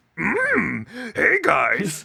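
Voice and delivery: put-on puppet frog voice. Joining the podcast as a fourth host, in a Kermit the Frog voice. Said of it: "[name]'s Kermit the Frog, I guess".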